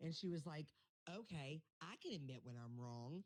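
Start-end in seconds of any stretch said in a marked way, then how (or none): 1.1-3.2 haughty, snobbish, stuck-up tone. Imitating how a rival talks when admitting she was wrong: imitating a snobby tone. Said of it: "she says it like that".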